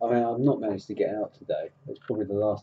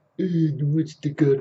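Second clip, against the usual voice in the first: clumsy mafia-boss voice, pitched up and louder; 8 semitones higher, 7 dB louder than usual. On a stream, mentioning someone watching Godfather with his missus, do the worst ever Marlon Brando impression. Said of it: "that's the worst impression ever".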